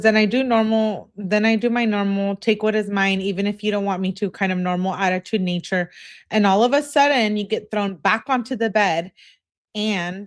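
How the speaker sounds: ordinary delivery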